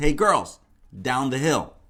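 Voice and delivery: mock irritated tone. Acting out a man calling to girls, imitating an irritated order. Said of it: "hear a little irritation in his voice".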